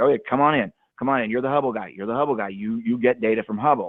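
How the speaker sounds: ordinary delivery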